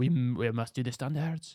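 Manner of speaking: not-great, cartoon-style put-on French accent. Quoting a very French Michelin guy, in a Ratatouille-style French accent. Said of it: "I'm dying to do the accent".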